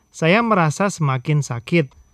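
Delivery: normal talking voice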